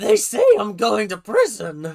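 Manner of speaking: swooping, lilting voice. Acting out a woman's phone call to a secret lover, attempting Abby's voice. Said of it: "not really Abby's voice".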